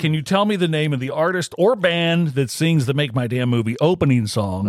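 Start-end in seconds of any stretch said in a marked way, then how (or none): none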